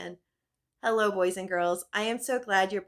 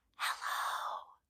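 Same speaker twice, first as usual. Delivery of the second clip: hushed, whispered voice. Leading boys and girls in a rhyme, saying hello as quiet as they can: as quiet as possible. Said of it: "Let's say hello as quiet as we can".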